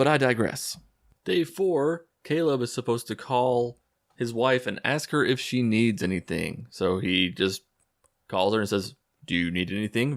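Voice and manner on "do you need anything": robotic, mechanical, machine-like delivery. Retelling a movie scene where Caleb calls his wife: robotic voice as Caleb. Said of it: "very robotically".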